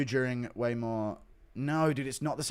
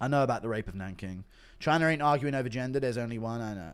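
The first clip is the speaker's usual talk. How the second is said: ordinary talk, nothing marked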